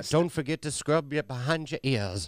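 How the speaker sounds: put-on old-time Southern accent. Joining in mimicking old-fashioned eloquent letter language, put-on old Southern accent. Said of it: "his accent does remind me a little bit of Stonewall Jackson".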